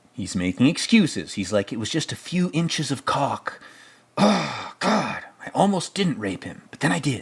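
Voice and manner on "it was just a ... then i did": angry, worked-up delivery. Retelling a movie scene where he makes excuses: mock-angry Jack Nicholson impression. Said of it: "My Jack Nicholson is always angry".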